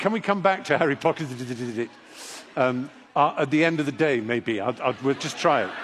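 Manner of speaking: plain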